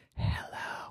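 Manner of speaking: very quiet, hushed whisper. Reading a story aloud, a girl answers a late phone call: said very quietly. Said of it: "she said very quietly".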